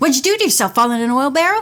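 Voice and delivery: rapid, rattled off with no pauses. [name] stops, grins at Nancy and speaks to her; rapid speech. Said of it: "In his rapid speech".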